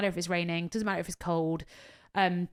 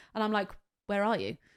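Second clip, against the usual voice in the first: normal talking voice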